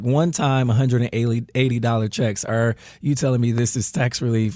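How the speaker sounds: normal talking voice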